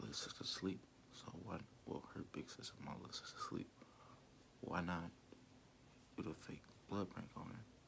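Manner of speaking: hushed, whispered speech. Youtuber vlogging while little sister is asleep, whispering. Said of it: "And I'm whispering".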